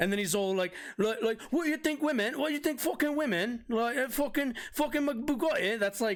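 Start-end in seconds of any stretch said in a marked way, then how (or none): 1.5-5.8 angry, worked-up rant, pitched up. Imitating him when somebody challenges him: imitating an angry Andrew Tate. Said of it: "when he gets all fucking pissing in his feelings".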